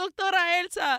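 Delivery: high-pitched scream. Retelling how Cornelio was suddenly chased after a howl: imitating Cornelio screaming. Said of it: "and he's screaming".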